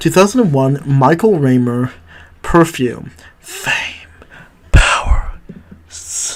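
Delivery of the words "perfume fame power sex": sultry, slow, drawn-out, sensual whisper. Reviewing a film, saying its title in a slow sensual whisper. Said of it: "I whispered that in a slow, sensual voice".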